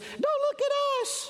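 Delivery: very high, squeaky, tiny voice. Voicing microscopic protozoans answering the speaker's question, in a tiny squeaky microscopic voice. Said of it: "in their little squeaky microscopic voices".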